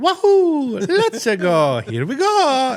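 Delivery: very high, very loud, slow, swooping belted call. Retelling a casting call for Mario, imitating Charles Martinet's Mario voice. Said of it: "he comes and he goes".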